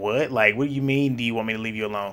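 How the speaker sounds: sassy, put-out, loaded with attitude. Retelling a man's reply in a reality show scene: imitating saying it with attitude. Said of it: "he said it with attitude and with a face".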